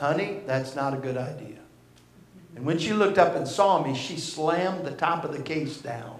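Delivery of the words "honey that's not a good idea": as soft and gentle as possible. Retelling a warning to a little girl opening a guitar case: retelling speaking softly. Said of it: "as softly as I could".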